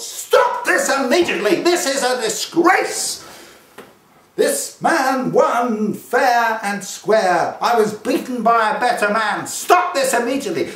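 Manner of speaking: very high, shrill, loud yell. Retelling a boxer leaping onto the ropes after the decision: imitating someone yelling at full volume. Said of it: "at the top of his lungs he yelled".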